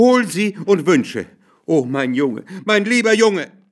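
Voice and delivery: panted-out, breathless, gasping, high-pitched words. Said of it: "keuchte seine Frau".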